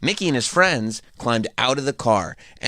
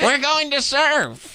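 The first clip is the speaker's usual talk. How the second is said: 1940s movie bad-guy gangster voice, pitched higher; 14 semitones higher than usual. Reading a character's line in a children's book aloud: 1940s movie bad guy voice. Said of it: "Sounds like a bad guy in the forties".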